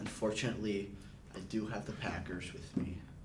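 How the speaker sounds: soft, reluctant under-breath voice. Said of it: "Why, why are you so quiet?".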